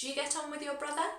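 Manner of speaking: voice goes up in pitch on brother. Teaching question intonation, rising pitch at the end on brother. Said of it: "Because it's a question, we go up in our intonation at the end".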